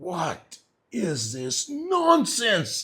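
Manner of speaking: play-acted, very high, swooping, drawn-out furious voice. Retelling how an angry Prabhupada rejected a chosen name: imitating Prabhupada angry. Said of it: "He was so angry".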